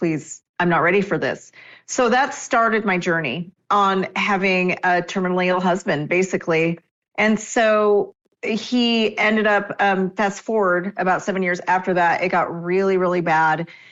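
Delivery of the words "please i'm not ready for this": desperate, begging voice full of desperation. Retelling praying while her husband lay in hospital: retelling a desperate plea to God. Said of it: "just begging God".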